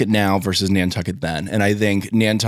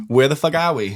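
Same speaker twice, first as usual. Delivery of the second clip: put-on Boston accent, much higher; 5 semitones higher than usual. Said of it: "the Boston accent".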